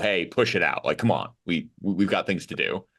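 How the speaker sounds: usual speaking voice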